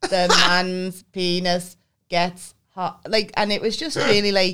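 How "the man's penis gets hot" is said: flat, monotone, very slow machine robot voice. Retelling a school video where a robot answers questions: imitating a robot voice. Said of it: "he answered in his robot voice".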